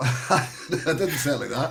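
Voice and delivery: laughing, giggly, slowed delivery.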